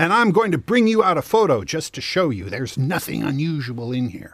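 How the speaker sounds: put-on voice, made really big, loud, and carrying. Retelling what a woman announced while waving her phone: imitating a really big voice. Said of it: "she said in this really big voice".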